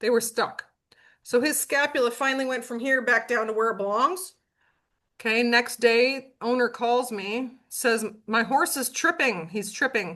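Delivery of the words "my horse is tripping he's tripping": ordinary talk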